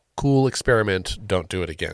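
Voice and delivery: ordinary talk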